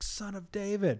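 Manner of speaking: mock very high rising shout. Retelling a man shouting for Jesus as everyone tells him to shut up, retelling a louder shout. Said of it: "he's just like all the louder".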